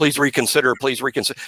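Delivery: mock, put-on begging, pleading tone. Imitating someone begging as a signed player walks out: imitating someone begging. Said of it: "you're begging and pleading on your, on your knees".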